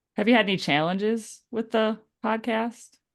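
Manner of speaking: strong, heavy Wisconsin regional accent. Asking a podcast host a question, in a strong Wisconsin accent. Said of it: "That was a hell of an accent on challenges".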